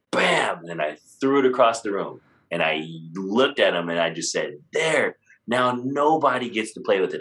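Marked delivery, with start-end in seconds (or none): 4.7-7.2 mild, high, light acted-out yell. Recalling throwing it across the room and speaking to him, retelling own shout. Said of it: "like at the top of my voice".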